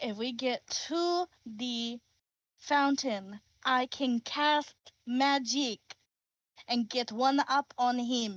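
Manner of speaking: slow, patronising, condescending talking-down tone. A character explains the plan to him, speaking slowly as if he's stupid. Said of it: "speaking slowly, as if he's stupid".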